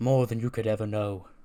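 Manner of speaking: ordinary talk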